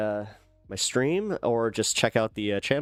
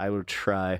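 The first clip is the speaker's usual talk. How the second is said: heavy stress on try; 3 semitones lower than usual. Promising to shout out viewers, stress on try. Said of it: "I put the emphasis on the try".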